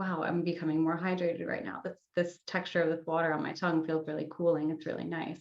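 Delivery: ordinary talk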